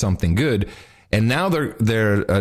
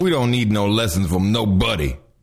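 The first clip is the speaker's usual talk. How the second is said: put-on tough mafia thug voice. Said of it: "He sounds like a mafia thug".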